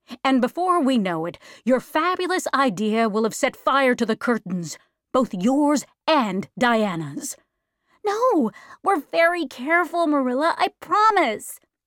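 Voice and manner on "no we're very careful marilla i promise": eager, earnest, pitched-up cry. Answering a warning from the woman who raises her, crying out earnestly. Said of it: "cried Anne earnestly".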